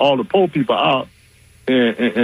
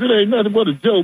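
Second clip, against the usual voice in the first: mock laughing dismissive tone, higher pitch; 9 semitones higher than usual. Retelling the press secretary dismissing it: imitating someone laughing it off. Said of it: "she was just laughing like".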